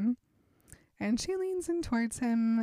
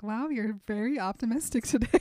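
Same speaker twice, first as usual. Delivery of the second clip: normal talking voice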